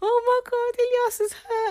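mock very high, tearful, crying little-kid voice. Retelling a small child's words after her sister got hurt: imitating someone crying. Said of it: "she's crying and she's like".

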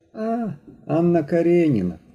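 plain, offhand, indifferent tone. A son glances over his mother's shoulder at her book, indifferent. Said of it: "Вона відчула в його голосі байдужість".

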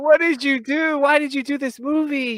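high-pitched, wailing, exasperated tone.

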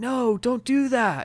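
fake whisper-shouting. Mocking two actors' performance in an interrogation scene: imitating a whisper-shout. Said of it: "whisper shout and you're like".

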